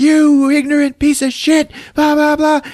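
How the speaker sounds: very high-pitched screaming drill-sergeant voice. Retelling a scene where Deadpool gets in a man's face: retelling Deadpool's drill-sergeant scream. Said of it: "starts screaming at him like Full Metal Jacket style".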